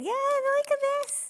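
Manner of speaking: voice shooting up very high. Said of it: "my voice is going up again now".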